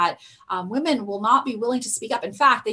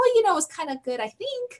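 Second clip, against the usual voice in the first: rising, questioning pitch on think; 9 semitones higher than usual. Demonstrating how raising the tone at the end sounds questioning: rising pitch on 'think'. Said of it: "you see how I raise my tone at the end of my voice?".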